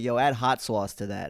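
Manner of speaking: put-on sudden shift into New York accent. Retelling ordering at a bodega, slipping into a sudden New York accent. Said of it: "where did that come from? What was that? That's not me".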